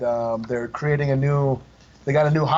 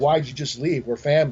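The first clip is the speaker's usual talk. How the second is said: normal talking voice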